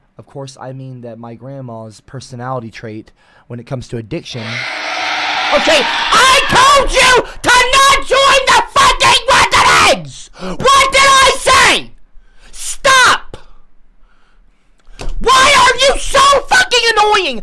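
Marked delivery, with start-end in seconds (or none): 4.4-17.4 furious yelling, higher and louder. Telling off people in the chat room: angry shouting. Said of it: "and you're pissing me off!".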